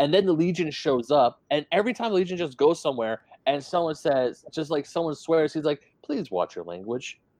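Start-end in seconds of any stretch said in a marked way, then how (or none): 6.0-7.2 very calm, soft, totally unruffled voice. Quoting the Legion asking a swearer to watch language: very calm voice. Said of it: "I read him in a voice that was very calm".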